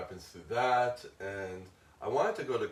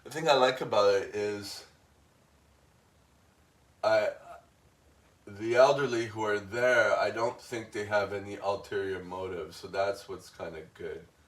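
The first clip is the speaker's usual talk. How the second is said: feeling welling up, slightly moved, a little emotional; 6 dB louder than usual. Speaking openly, the speaker is getting a little emotional. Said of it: "I'm getting a little emotional".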